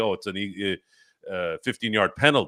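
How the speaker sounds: plain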